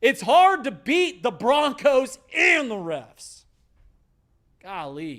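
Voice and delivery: agitated, high-pitched, getting worked up, exasperated. Complaining about the refs during a Broncos game: getting worked up. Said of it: "I'm getting worked up".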